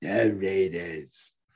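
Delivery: very low, deep, dropped put-on voice. Showing how to end a Chris Berman impression: Chris Berman impression. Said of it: "you got a Berman impression".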